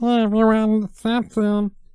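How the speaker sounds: very high-pitched ventriloquist dummy voice. Ventriloquist introducing the puppet to the crowd, answering in Samson puppet voice. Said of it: "I like voices and ventriloquism".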